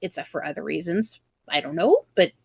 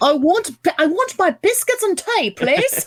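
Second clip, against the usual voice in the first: put-on working-class British accent, much higher, louder; 8 semitones higher, 3 dB louder than usual. Joking about sounding lower class, speaker puts on a lower-class british accent. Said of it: "if I want to sound like a lower class citizen".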